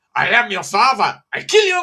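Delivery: loud, high, belted ventriloquist puppet voice. Retelling a Star Wars parody by a ventriloquist: Ahmed voice.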